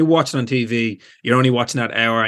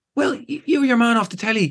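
very high, squealing starstruck woman's voice. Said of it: "a woman stopped me and goes".

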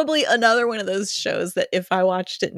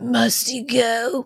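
put-on, heavy chain-smoker's voice; 4 semitones higher than usual. Redoing the line on request, in a Marge Simpson's sisters voice. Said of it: "Make it like a smoker".

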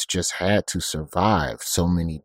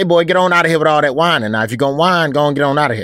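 put-on fast, raised-pitch, old-school Alabama church deacon voice; 9 semitones higher, 8 dB louder than usual. Speaker retells telling off a boy flailing and whining: old-school alabama deacon voice. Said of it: "I go old school Alabama Deacon on him".

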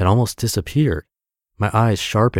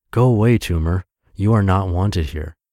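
put-on whisper. Retelling words once whispered to a tumor, eyes closed: imitating a past whisper. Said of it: "I would whisper".

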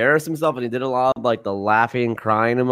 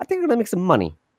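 dumb put-on voice, higher; 7 semitones higher than usual. Imitating Jay Leno talking about choosing between friends and money: Jay Leno impression. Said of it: "the universal Jay Leto impersonation".

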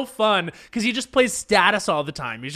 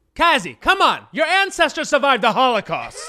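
loud, high put-on voice, pitch swinging up and down; 6 semitones higher than usual. Asked to deliver a line in Larry David voice, loud Larry David voice. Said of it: "deliver that line in your Larry David voice".

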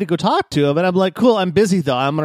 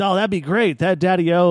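put-on smooth-talking voice; 2 semitones higher than usual. Retelling a game conversation, being offered release: imitating Benny. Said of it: "And he's like".

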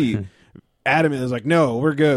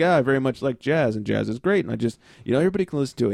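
acted, plain, dead-serious deadpan delivery. Retelling a driver's reply about liking jazz: imitating a very straight answer. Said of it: "very straight answer".

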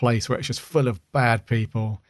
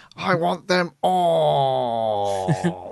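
put-on creepy clown-like alien voice, higher; 4 semitones higher than usual. Imitating the story's alien, whose voice reminds the speaker of Pennywise. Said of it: "I can't even do the voice properly".

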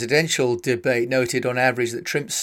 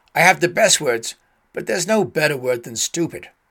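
clumsy, bad put-on American accent; 3 semitones higher than usual. Imitating someone talking about words and school, in a bad american accent. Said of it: "Forgive the bad accent".

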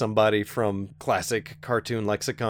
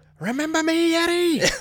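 squeaked out at very high pitch; 4 dB louder than usual. Recounting the scene where the villain's eyes pop out, doing his line in a very high squeaky voice. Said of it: "his very high squeaky voice".

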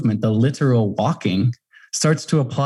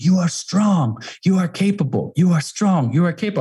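put-on shout, higher; 6 semitones higher than usual. Retelling shouting encouragement to himself in the Antarctic: imitating own yell. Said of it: "I start yelling it".

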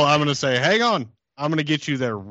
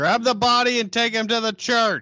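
very high, shrill yell; 11 semitones higher than usual. Having said they will yell at him, the speaker now does it, yelling. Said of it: "I'm gonna yell at him".

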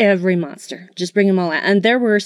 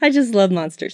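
giggling, laughing while speaking. Apologizing for giggling while rating a monster movie: giggling while talking. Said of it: "I'm very giggly tonight".

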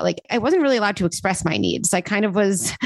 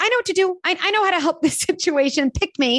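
very high, overzealous, eager schoolkid voice; 9 semitones higher than usual. Acting out an inner protector part as an eager kid: put-on overzealous kid voice. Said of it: "like, an overzealous kid in class".

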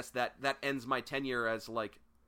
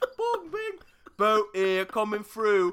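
very high, very loud, shrill put-on British accent; 10 semitones higher, 11 dB louder than usual. Voicing a boat's bell in a joking exchange, in a British accent. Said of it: "The bell has a British accent".

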